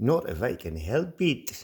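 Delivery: amateurish, bad put-on Scottish accent. Quoting a line from the movie Highlander: attempted Scottish accent. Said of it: "my attempt at a French, uh, Scottish accent".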